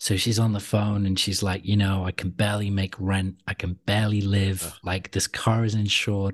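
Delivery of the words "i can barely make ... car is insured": ordinary talk, nothing marked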